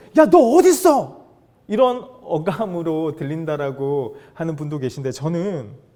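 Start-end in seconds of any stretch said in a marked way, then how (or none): 0.2-1.3 furious yell, very high and very loud. Showing how some people hear God's question, acting out angry scolding. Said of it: "막 화를 내시면서".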